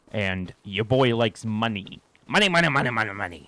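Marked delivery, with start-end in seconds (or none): 2.2-3.3 clumsy, terrible put-on cartoon crab voice. Looking for collectibles worth money in a game: terrible Mr. Krabs voice. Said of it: "That's a terrible Mister Krabs".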